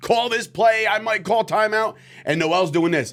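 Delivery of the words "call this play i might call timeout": put-on coach yelling, high and urgent. Retelling how a coach yelled during the game: imitating a coach yelling. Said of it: "Coach is yelling. I'm talking yelling at him like".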